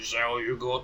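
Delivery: put-on dim-witted, slurring cockney accent, troll voice. Narrating a fight, the speaker voices the troll in a dumb, slurring cockney troll voice. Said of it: "in its dumb, slurring voice, it says".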